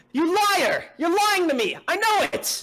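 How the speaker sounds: shrill, furious shout at very high pitch. Reading an interview log aloud as the frightened subject: shouting accusation. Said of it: "express that he's shouting".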